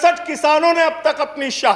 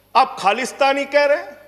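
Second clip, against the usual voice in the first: plain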